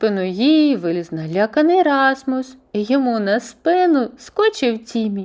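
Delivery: plain reading voice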